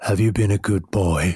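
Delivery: deep, calm, low-pitched voice. Recounting meeting Santa out in the cold, doing Santa's deep, calm voice. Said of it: "in his deep, calm voice".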